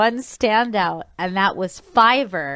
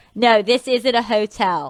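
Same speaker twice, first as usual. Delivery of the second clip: slow, thick, laid-on, put-on Philadelphia accent. Retelling a commercial's last line, imitating a thick Philly accent. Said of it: "has this very thick Philly accent".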